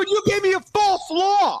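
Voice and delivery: mock shrill, very high, dragged-out yell. Retelling an argument in the airport: imitating himself yelling. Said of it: "Now I'm yelling at him in the airport".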